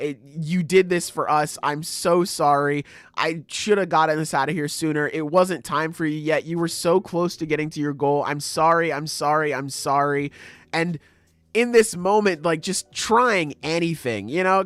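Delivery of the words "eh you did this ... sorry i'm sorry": put-on crying, tearful voice. Retelling a character's apology after a loss: imitating someone crying. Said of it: "her breaking down and crying and saying".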